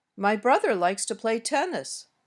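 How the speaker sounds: pitch rises on brother and tennis, falls at end. Demonstrating English intonation with an example sentence, rising on brother and tennis. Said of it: "My voice went up a little on brother".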